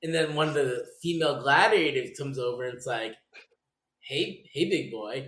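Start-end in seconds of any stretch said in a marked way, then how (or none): 4.0-5.3 mock teasing, slow, flirtatious call. Retelling how a female gladiator flirts with the winner: imitating flirting. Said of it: "starts, like, flirting".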